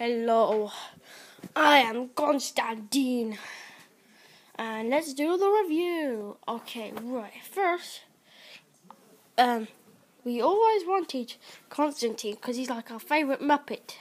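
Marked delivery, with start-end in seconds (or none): 0.0-3.4 very slow, deliberate, drawn-out puppet voice. Voicing the toy being reviewed as it greets: Constantine voice. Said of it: "aren't you, Constantine?".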